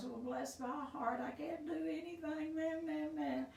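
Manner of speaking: high, whiny, self-pitying moan. Talking about relapse, the speaker demonstrates self-pity in a whiny voice. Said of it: "we just have that little whiny-ass voice".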